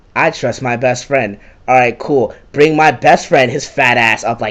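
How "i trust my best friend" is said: plain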